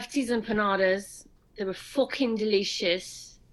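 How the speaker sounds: English-sounding accent. Asked for a food review in a british accent, the speaker obliges: british accent. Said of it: "Your British accent".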